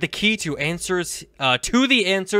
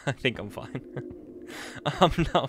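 whispered, breathy words through nervous laughter; 5 semitones lower, 11 dB quieter than usual. Exploring a game level while dreading jump scares: nervous laughing while talking. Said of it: "I'm laughing nervously".

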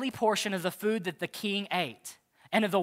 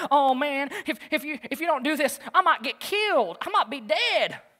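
put-on nervous voice, higher and slower; 6 semitones higher, 4 dB louder than usual. Retelling the chief eunuch's reply to Daniel: acting out nervous chief eunuch. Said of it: "then the chief eunuch got all nervous".

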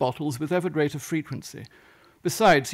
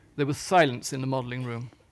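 usual speaking voice

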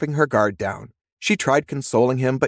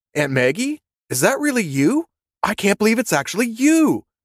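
eager, delighted, enthusiastic, high, rising exclamation; 7 semitones higher than usual. A man gets out of his car and approaches a woman, enthusiastic. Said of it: "he said enthusiastically".

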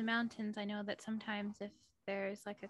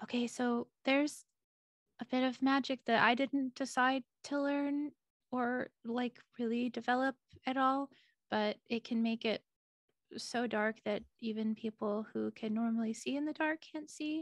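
steady, raised voice, in character; 5 dB louder than usual. In a cave during a tabletop game, Nurley listens in, then speaks very quietly. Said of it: "She's going to speak very quietly".

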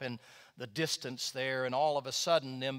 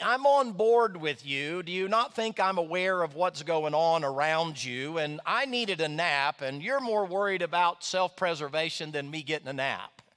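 annoyed, put-out, irritated, raised voice; 4 semitones higher, 6 dB louder than usual. Acting out the reply of the one woken from his nap, mock-irritated voice. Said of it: "it's almost with an irritated voice".

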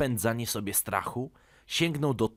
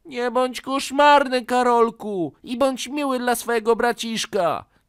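loud, angry scolding shout; 12 semitones higher, 8 dB louder than usual. A mother scolds her son after his little brother complains, shouting. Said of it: "krzyknęła mama".

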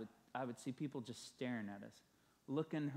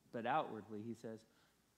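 normal talking voice

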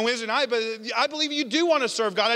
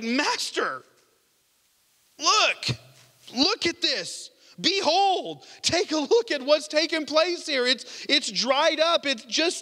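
mock awestruck, marveling exclamation, sounding amazed; 4 semitones higher than usual. Retelling Peter's words on seeing the withered fig tree: imitating Peter, amazed. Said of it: "he's just amazed".

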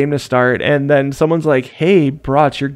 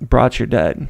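put-on deadpan delivery; 3 semitones lower than usual. Retelling what someone said when the speaker's gun wouldn't fire, imitating a deadpan reply. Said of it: "look at me in deadpan and be like".

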